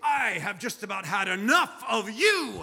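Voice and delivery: slow, teasing, pretend-cross, fake-angry delivery. A father playfully pretends to scold his children at the pool, mock-angry. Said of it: "I would pretend I was angry with them".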